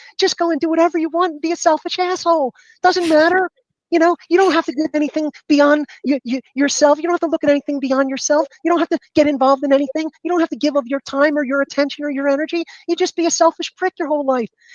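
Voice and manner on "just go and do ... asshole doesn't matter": put-on pleasant little voice, higher pitch. Reenacting sarcasm from the last season of a show: mock nice little voice. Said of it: "If I speak with this nice little voice".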